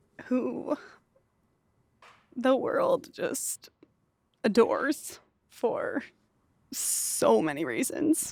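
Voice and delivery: tearful speech, crying while talking. Introducing her mom on the podcast, she speaks while crying. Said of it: "I'm already crying".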